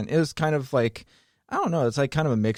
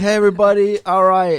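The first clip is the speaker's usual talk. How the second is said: mocking put-on voice, higher and louder; 10 semitones higher, 11 dB louder than usual. Retelling mocking the tour guide at a group dinner: mocking imitation of the tour guide. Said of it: "started, like, mocking him".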